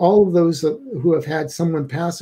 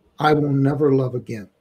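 put-on mutter, said under the breath; 2 semitones lower than usual. Recounting what a man whose wife was in a coma said, under his breath. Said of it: "said to us under his breath".

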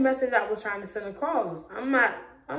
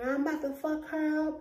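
put-on woman's voice, loud screaming outburst; 6 semitones higher, 5 dB quieter than usual. Retelling what a woman screamed as the speaker left the room, imitating a woman screaming. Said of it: "This bitch started screaming".

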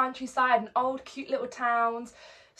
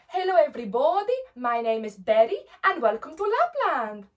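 put-on Finnish elf accent, sing-song with highs and lows; 2 semitones higher, 4 dB louder than usual. Greeting children while playing an elf, in a Finnish accent. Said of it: "we had to have a Finnish accent".

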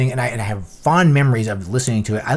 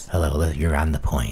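public radio announcer voice; 9 semitones lower, 4 dB quieter than usual. Recalling a local station's DJs, the speaker does their greeting in NPR radio voice. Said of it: "They said it was the NPR voice".

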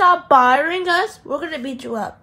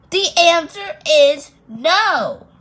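loud yelling; 4 dB louder than usual. Refusing to share Play-Doh in a skit, yelling. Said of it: "don't yell at me".

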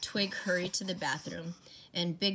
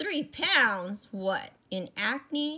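loud, pitched-up, jeering, mocking laugh; 7 semitones higher, 6 dB louder than usual. A man answers another man's confession, laughing and mocking him. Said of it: "Big John broke out laughing".

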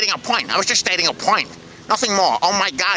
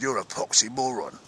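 put-on London Cockney accent, street-style; 9 semitones lower, 8 dB quieter than usual. Retelling being asked to do an accent on the spot, in a cockney accent. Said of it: "that's a Cockney accent".

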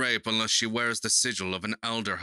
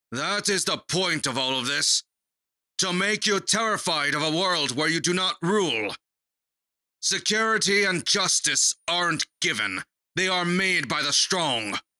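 raised, pitched-up, louder voice; 7 semitones higher, 4 dB louder than usual. Leaning back, one Red addresses another Red, with a raised voice. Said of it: "I lean back and raise my voice".

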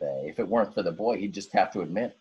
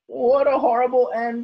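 very high, loud, groaning lament; 7 dB louder than usual. Kermit the crab speaks as a dog digs a hole for him: with a groan. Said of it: "Kermit said with a groan".

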